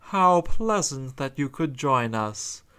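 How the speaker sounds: sugary, syrupy, sickly sweet polite tone. Reading a story aloud, the hook-handed man greets a trapped girl: sickly sweet voice. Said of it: "said in a sickly sweet voice".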